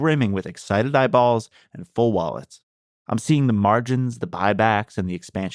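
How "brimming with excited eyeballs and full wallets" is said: ordinary delivery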